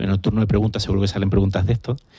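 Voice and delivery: fast, rushed delivery.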